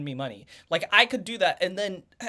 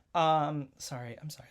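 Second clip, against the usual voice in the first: plain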